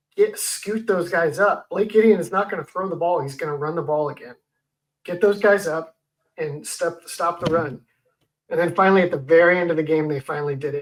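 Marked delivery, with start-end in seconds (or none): none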